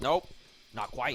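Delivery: put-on overlord machine robot voice. Retelling a skit, quoting the robot character: imitating a robot voice. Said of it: "The robot".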